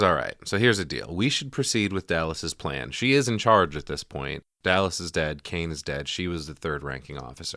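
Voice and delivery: ordinary talk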